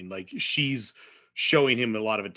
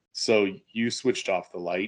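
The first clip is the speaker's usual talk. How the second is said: put-on dry, flat, unbothered deadpan; 3 semitones lower than usual. Retelling another man's reply to him, in a mock-deadpan voice. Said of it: "like into deadpan, not angry voice at all".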